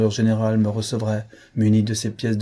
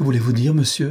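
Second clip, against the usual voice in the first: anguished, pained voice; 3 semitones higher than usual. The Creole woman asks a gentleman what he means, anguished. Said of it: "Demanda la créole avec angoisse".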